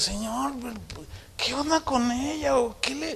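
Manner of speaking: high, soft, hushed, bewildered tone.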